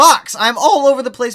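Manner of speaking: high, loud voice breaking mid-word. Greeting someone while his voice keeps cracking, voice cracking. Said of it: "my voice just cracked".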